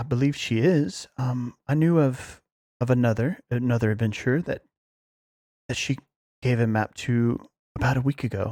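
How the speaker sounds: quiet muttering under the breath. Voicing a character answering a question about a map: speaking under her breath. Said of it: "she's speaking under her breath".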